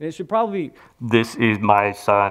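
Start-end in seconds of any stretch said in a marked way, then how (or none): 1.0-2.3 enormous, very deep, slow, drawn-out giant voice. Retelling how the voice from heaven spoke of its son, in a giant voice. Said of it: "just like this giant voice that you would never forget".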